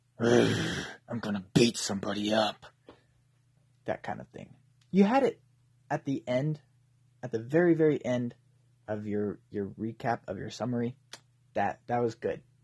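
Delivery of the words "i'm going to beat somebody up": angry growling voice, slower. Showing the other speaker how to get the voice right, angry growl. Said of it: "gotta get the growl".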